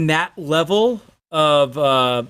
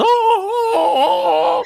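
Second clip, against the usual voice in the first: very high, loud, mocking wailing vocals. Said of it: "I call it screaming music".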